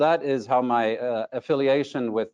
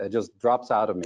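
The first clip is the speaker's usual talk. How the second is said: ordinary talk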